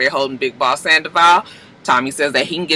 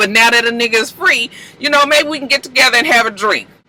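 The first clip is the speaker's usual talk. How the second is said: high, happy, relieved. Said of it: "James is so happy".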